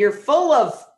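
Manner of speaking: ordinary delivery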